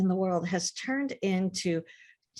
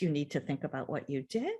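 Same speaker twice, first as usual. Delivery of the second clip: kind, gentle motherly voice, quieter; 5 semitones lower, 5 dB quieter than usual. A mother retells sending her very little child to her room, retelling kind motherly voice. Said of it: "in my kind motherly voice".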